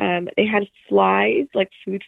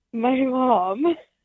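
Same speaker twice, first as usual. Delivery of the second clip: speech breaking into laughter throughout; 4 semitones higher than usual. Answering a question about what happened before leaving the house, laughing while speaking. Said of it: "I can't even do it without laughing".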